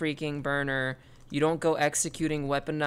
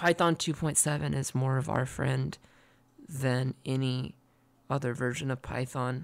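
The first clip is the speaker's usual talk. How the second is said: whispering close into the microphone. Speaker whispering into the microphone to share important information, whispering. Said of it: "I'm whispering into the microphone".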